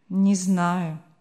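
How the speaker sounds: sullen, gloomy, morose voice. Narrator reads the host's reply to a girl who calls him kind, sullen. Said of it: "угрюмо отвечал хозяин".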